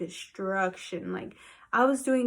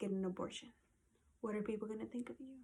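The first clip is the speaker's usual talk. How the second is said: very soft, very quiet, sneaky, sly voice; 14 dB quieter than usual. Retelling what the devil kept telling her: imitating a sly, subtle voice. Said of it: "in the most subtle, subtle voice".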